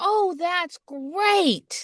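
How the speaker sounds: high, chipper, beaming cheerful dad voice. Retelling a man's reply about the broken door; imitating a cheerful man. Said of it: "He's like the happiest camping dad".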